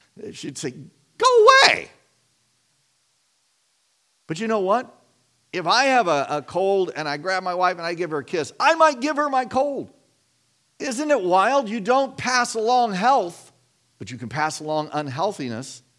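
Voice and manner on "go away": high, loud, playful and dismissive. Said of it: "I mean, playfully".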